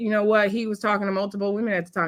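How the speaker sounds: normal talking voice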